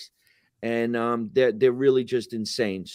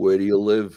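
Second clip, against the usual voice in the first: put-on voice, deep and much lower; 3 semitones lower, 5 dB louder than usual. Retelling a guy's jacuzzi boast on set, speaker answers in a deep voice. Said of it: "With the deep voice".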